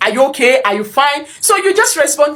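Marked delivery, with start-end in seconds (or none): none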